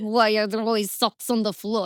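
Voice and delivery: character voice with put-on Ukrainian accent. Actor recalling a voice from playing a lunch lady, now used at home, Ukrainian accent. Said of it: "she was like Ukrainian accent".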